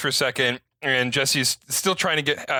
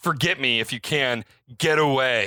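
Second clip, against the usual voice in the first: put-on loud stage whisper everyone can hear. Recounting a story scene where one man speaks to another, retelling a loud stage whisper. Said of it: "in a fake whisper that everyone can obviously hear".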